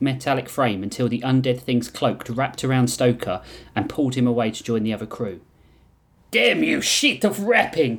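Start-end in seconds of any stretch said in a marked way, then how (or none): 6.3-8.0 high-pitched, flung-out yell. A fighter pulled away by an undead thing's cloak yells. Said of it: "he yelled".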